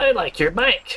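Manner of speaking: put-on tiny, small, scratchy, very high child voice. Voicing a masked child in a game: small, slightly scratchy voice. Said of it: "A small, slightly scratchy voice emerges from the mask".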